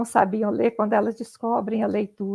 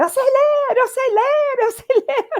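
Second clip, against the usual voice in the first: put-on shouting, pitched higher; 4 dB louder than usual. Retelling a pupil running through school after learning to read: imitating a pupil shouting. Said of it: "Aí ele saiu gritando pra escola".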